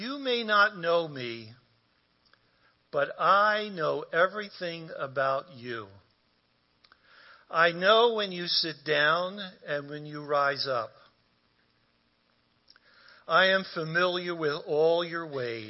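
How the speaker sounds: deliberate, slow reading, each word given time. Reading a passage aloud to listeners who may close their eyes, reading slowly. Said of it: "let me read this slowly to you".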